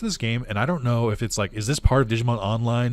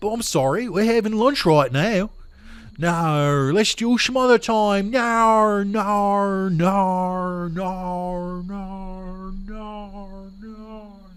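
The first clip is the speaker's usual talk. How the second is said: put-on Australian accent, pitched up, every "no" stretched; 9 semitones higher than usual. Voicing Catherine, a favorite game NPC, in a put-on Australian accent. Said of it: "that's my Australian accent".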